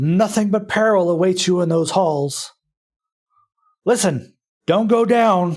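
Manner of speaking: gruff orc voice, rough, high shout. Voicing an orc hiding in the dead trees, rough shout. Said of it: "you hear a, a rough voice shout".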